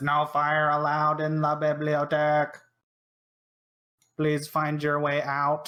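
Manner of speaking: odd, stiff, flat robot voice. Voicing a library robot telling the party to leave: weird robot voice. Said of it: "in a really weird robot-y voice".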